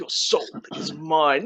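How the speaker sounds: put-on menacing villain voice. Showing the reaction done while playing: Mortal Kombat villain voice. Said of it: "I'm like".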